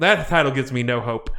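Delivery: ordinary delivery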